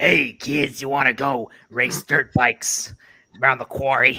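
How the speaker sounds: put-on heavy chain-smoker voice. Co-host shows what the other host's voice sounds like, in a truck-stop chain-smoker voice. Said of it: "that's more on point".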